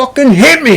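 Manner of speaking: high, put-on taunting yell, acted out. Retelling a fight where a fighter yells at his opponent: imitating Kimbo Slice yelling. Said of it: "He yells at him three times".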